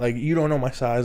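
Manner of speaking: ordinary talk, nothing marked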